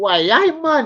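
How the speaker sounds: clumsy bad Geordie accent, very high, shrill, very loud. Trying out a regional accent, bad Geordie accent. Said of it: "I can't really do a Geordie accent that well".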